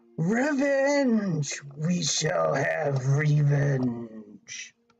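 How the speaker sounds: dragon voice with the word revenge drawn out. The speaker quotes a dragon's revenge line in a Smaug impression. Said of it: "Smaug the Dragon says it better than me".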